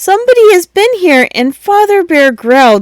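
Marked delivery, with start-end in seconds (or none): 0.0-1.3 very high, squeaky little voice. Reading the story aloud, voicing Baby Bear as he cries out, in a very squeaky voice. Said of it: "he cried very squeaky voice".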